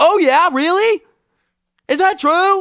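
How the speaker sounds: put-on screaming. Retelling how dad screams back at him: imitating dad screaming. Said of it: "will start screaming at me".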